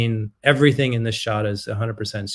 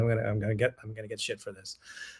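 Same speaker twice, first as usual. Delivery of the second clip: quiet muttering under the breath; 9 dB quieter than usual. Recalling own past words: imitating a mutter under the breath. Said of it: "I'd mutter under my breath".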